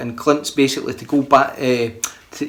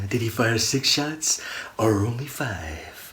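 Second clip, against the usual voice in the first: slow, deliberate delivery, like a movie hero; 3 semitones lower, 9 dB quieter than usual. Acting out a movie catchphrase as asked: Clint Eastwood voice. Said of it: "you do, eh, Clint".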